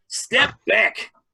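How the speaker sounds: tough, fake, put-on New Jersey accent. Showing the gully dwarf voice others describe: put-on Jersey accent. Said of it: "I wanna give 'em that accent".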